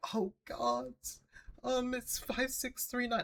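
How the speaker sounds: mock very high, soft, beaten-down defeated tone. Describing how her voice sounded giving the address, imitating a defeated voice. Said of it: "like this like defeated sounding voice".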